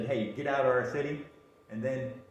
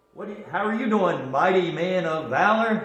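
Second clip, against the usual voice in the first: put-on, very loud, high-pitched, dripping sarcasm; 6 semitones higher, 9 dB louder than usual. Retelling the angel greeting a man hiding in a wine press: sarcastic tone. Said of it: "Sort of, um, sarcastically".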